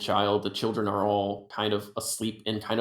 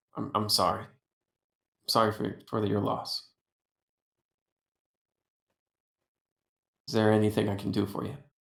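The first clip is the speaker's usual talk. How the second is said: breath catching, cut short. Holding a goblin child, she offers condolences for a loss, breath catching. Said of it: "her breath gets cut short".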